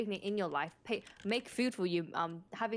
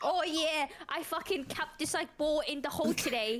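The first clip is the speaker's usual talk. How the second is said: put-on British accent with raised pitch; 7 semitones higher than usual. Mocking what a sixty-year-old would say to you, put-on British accent. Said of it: "why the fuck are you British when you say that?".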